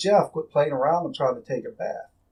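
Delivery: ordinary talk, nothing marked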